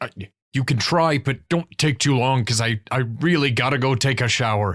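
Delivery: fidgety, hurried, antsy, impatient. Voicing an antsy character letting others try a knot: antsy, impatient. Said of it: "Gord is, like, really antsy".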